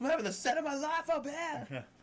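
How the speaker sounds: manic, heckling voice.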